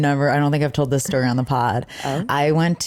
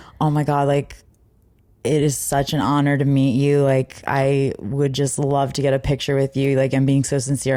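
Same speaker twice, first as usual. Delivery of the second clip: ordinary talk, nothing marked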